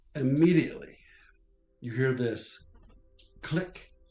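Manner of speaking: dramatic, sudden, loud, high booming voice.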